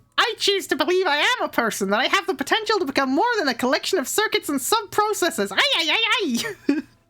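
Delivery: squeaky high character voice. Reading a robot's lines aloud in character: Alpha 5 voice. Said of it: "what Alpha Five sounds like".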